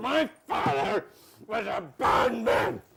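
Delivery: speaking mid-chew, mouth full. Asked about their father, the speaker answers while eating, talking with mouth full. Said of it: "Excuse me, I'm eating banana".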